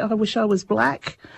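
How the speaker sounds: ordinary talk, nothing marked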